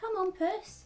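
very high, gentle coaxing. A woman calls a ginger cat toward her again, reassuring. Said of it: "she said again reassuringly".

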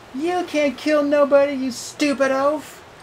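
very high-pitched jeering, taunting tone. Answering the monster who wants to kill her, taunting. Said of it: "she taunted".

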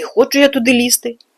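offended, sulking. A narrator reads a girl refusing a shaggy creature's order, offended and sulking. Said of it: "образився Грицик".

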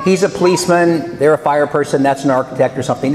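plain

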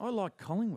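hushed whisper. On a radio show, a panelist offers a positive, whispering it. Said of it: "I'm just whispering it".

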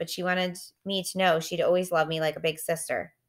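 ordinary delivery

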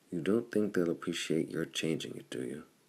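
ordinary delivery, nothing marked

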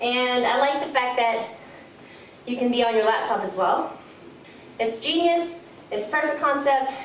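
out-of-breath talking, puffing between words. Exercising while trying out a laptop-holding strap, the speaker reviews it, out of breath. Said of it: "As you can tell, I'm breathing harder".

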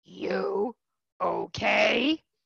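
put-on, weird, rough, scratchy, crazy voice. Speaker retells a big stranger on the dock asking if they're okay, imitating a man's crazy voice. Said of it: "it's like this crazy voice".

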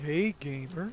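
casual, relaxed voice. Repeating a greeting after being asked to do it in John's voice: John's voice. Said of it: "you gotta do it with John's voice".

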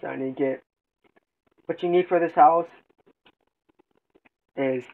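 speaking with mouth full. Speaker mid-explanation while eating tamales, talking with mouth full. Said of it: "Sorry, I'm eating some hot tamales".

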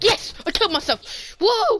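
squealed way up in the top register. A streamer reacts out loud while playing a game, loud shouting. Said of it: "I think I just burnt everyone's ears out".

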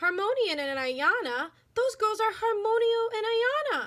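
very high, rising, drawn-out outcry. Annabelle cries out on hearing the teacher greet the girls, cried out. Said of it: "cried Annabelle".

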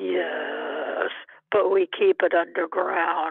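silly, loud, put-on deep bass voice. Retelling what a man said back to the speaker, in a put-on deep voice. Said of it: "he put on a deep voice and says".

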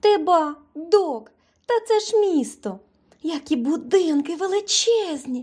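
delighted, chattering voice. A little mouse talks to Doc on seeing the city: delighted chatter. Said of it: "захоплено теревенила мишка".

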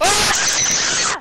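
loud, high-pitched startled yelling.

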